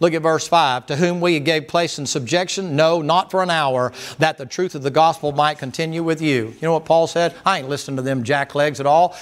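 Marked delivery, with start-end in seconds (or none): none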